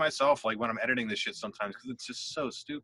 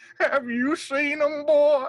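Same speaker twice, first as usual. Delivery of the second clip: put-on very high, loud old grandpa voice; 14 semitones higher, 7 dB louder than usual. Showing the old grandpa bit for their podcast, old grandpa voice. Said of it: "an old grandpa come out and do the voice".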